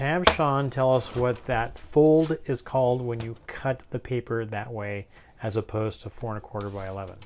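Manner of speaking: usual speaking voice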